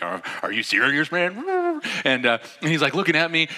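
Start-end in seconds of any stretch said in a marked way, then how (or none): 0.0-1.8 distorted voice, much slower. Retelling catching a stumbling woman and turning to a man, distorted voice. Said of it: "my voice is all like distorted".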